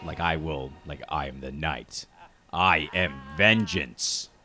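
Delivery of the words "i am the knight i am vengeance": stern, severe, low, slow hero voice. Showing what happens when the voice dips below normal pitch: a stern voice. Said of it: "I immediately go into like that like stern like".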